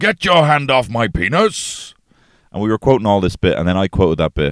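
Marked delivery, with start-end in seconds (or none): 0.0-1.9 very high, stretched-out, acted yelling. Retelling a story, the speaker quotes a man held by guards, retelling a shout. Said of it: "he starts shouting".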